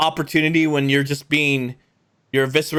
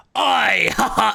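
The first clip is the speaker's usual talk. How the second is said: mocking, taunting tone, higher pitch; 7 semitones higher than usual. Voicing a Nosferatu taunting a player in a fight: taunting Nosferatu voice. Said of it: "taunting you".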